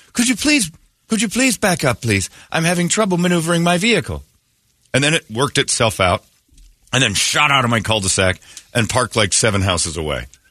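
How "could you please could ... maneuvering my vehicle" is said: very high, courteous automated car voice. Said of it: "this voice goes".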